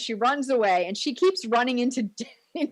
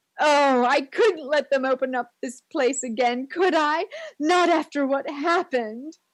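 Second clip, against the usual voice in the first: put-on overly dramatic voice, higher; 3 semitones higher than usual. Retelling a movie scene, imitating Mrs. Voorhees being super dramatic. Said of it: "she goes all in".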